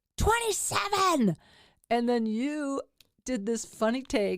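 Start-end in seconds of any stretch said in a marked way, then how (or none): 0.2-1.4 put-on enraged scream, much higher pitch. Demonstrating getting into a rage, speaker reenacts screaming a number at the other speaker. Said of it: "And so I screamed at you".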